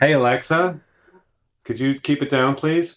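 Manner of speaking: snarky tone. Asking the voice assistant to turn the music down: snarky. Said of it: "the first one sounded too snarky".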